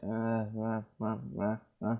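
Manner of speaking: put-on sleepy, drowsy stammering.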